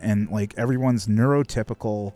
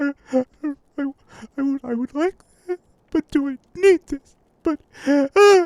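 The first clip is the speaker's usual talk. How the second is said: put-on, very high, loud, stammering, near-tears pleading; 5 dB louder than usual. Retelling a girl's words in a store as she starts crying: imitating a girl starting to cry. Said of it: "and then she just started fucking crying".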